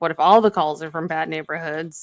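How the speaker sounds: plain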